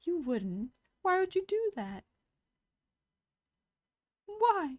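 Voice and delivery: very high, pleading little-guy cartoon mouse voice. Showing the funniest way to play the little guy card, Mickey Mouse voice. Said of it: "I sound like Mickey Mouse when I do that".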